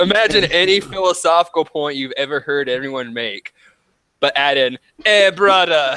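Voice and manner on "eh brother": ridiculous, exaggerated, over-the-top put-on Jamaican accent. Mocking how a character with dreads talks, in a ridiculous jamaican accent. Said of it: "this ridiculous Jamaican accent".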